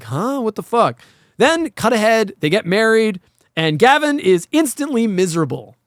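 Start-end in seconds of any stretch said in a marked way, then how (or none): 0.0-1.0 acted, startled and confused double take. Retelling a man's reaction to a woman's smile: imitating a startled double take. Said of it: "doing a double take, like".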